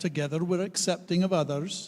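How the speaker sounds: Scottish accent. Leading a group through shared values, asked by the reverend to use a Scots accent. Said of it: "talk in my Scots accent".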